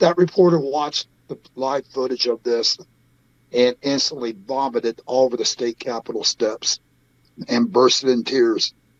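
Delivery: emotional, voice getting a little choked. Recounting a reporter's reaction to live footage, a little choked up. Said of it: "I'm getting a little choked up".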